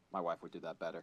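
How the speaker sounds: ordinary delivery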